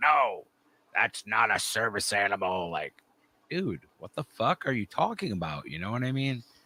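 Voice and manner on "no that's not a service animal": slow, bossy, power-tripping official voice. Retelling what a power-tripping security guard said. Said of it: "a completely power tripping dude who was just like".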